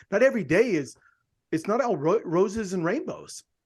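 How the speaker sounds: normal talking voice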